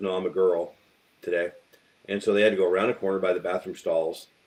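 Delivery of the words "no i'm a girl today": ordinary talk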